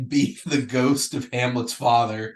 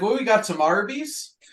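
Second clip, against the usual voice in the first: very high put-on Minnesota accent, movie style; 9 semitones higher than usual. Recalling a movie's characters and quoting them: imitating the movie's accent. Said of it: "talked in that accent for a month".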